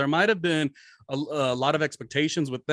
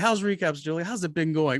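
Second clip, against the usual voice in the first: put-on condescending tone; 3 semitones higher than usual. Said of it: "The way she said it, super condescending".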